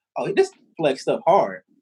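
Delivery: normal talking voice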